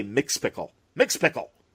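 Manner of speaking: irritated, angry, cross outburst. Retelling how the radio Superman said the name: imitating an angry Bud Collyer. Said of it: "And he'd be all angry".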